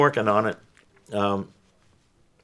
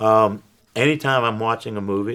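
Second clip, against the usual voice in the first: plain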